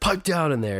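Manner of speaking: put-on furious yell. Retelling how a frustrated man yelled at his loud kids, imitating an angry yell. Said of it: "He yells".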